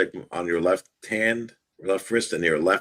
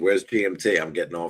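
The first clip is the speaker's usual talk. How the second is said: ordinary talk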